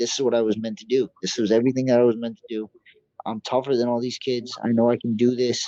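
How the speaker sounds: usual speaking voice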